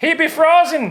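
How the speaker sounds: put-on Irish accent. Talking about a frozen ice parrot, joking irish accent. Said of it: "Why did I talk Irish right there?".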